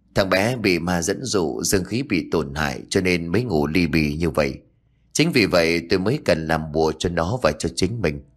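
plain reading voice

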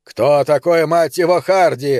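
snapped, snapping. A narrator reads a character's question to the chief, snapped. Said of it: "скинулся Пономарь".

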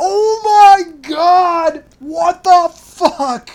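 very high, slow, stretched-out shriek. Retelling a night when someone screamed across the house: imitating Mike screaming. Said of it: "I can hear Mike just screaming".

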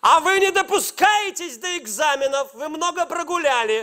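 high, scolding teacher's call. Recounting an exam day, acting out the teacher at the door: imitating a teacher shouting. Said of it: "а она мне кричит".

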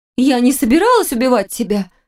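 high-pitched shout, gasping and choking for air. A mistress answers a man's snarled question; gasping for air, shouting. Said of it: "захлебываясь воздухом, прокричала любовница".

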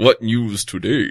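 storybook-style cow voice. Storyteller telling a folk tale, the cow speaking, in a cow voice. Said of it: "That's my cow voice".

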